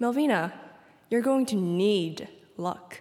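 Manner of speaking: smug, superior, confident, snotty tone. Retelling what a swimmer who always beat her said on deck, mock-confident snotty tone. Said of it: "in this really confident and snotty tone".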